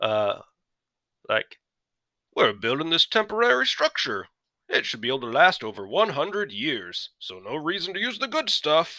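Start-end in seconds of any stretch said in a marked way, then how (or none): 2.3-9.0 crappy put-on British English accent, pitched up. An american poking fun at european building habits, bad english accent. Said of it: "I'm going to do an English accent".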